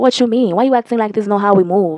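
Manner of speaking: ordinary delivery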